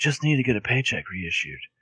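soft, low-key, cool-guy manner. Telling a story, the speaker voices Jason replying to her in Jason's cool guy voice. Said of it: "I like the same voice for Jason".

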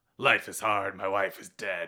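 gruff video game hero voice. Demonstrating the game character's voice acting for the host, Max Payne-esque gruff voice. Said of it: "very Max Payne-esque".

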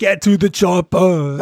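slow, really bad raspy voice. Speaker admits a line was a terrible raspy Schwarzenegger impression. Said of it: "it's me with a raspy voice doing a really terrible Schwarzenegger impersonation".

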